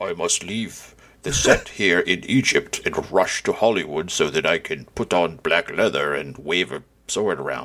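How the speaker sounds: low, slow, mock grandiose voice. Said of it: "he was like".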